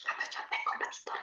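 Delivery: soft, unvoiced, playful conspiratorial whisper.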